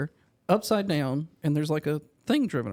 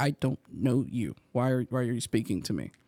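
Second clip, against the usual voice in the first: mock-shy small child voice, much lower; 4 semitones lower than usual. Retelling a child in a buggy shrinking from someone's greeting, imitating a shy child. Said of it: "He shrunk down into the buggy and was like".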